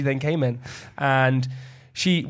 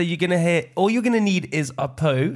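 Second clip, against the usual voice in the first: put-on South African accent; 3 semitones higher than usual. Retelling what a lady said to the speaker, in a South African accent. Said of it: "That's South African".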